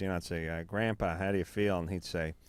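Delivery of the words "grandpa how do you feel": plain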